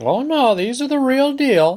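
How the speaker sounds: put-on very high old woman voice. Explaining placebo pills, voicing the grandma's reply about her pills, in a grandma voice. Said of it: "without the grandma voice".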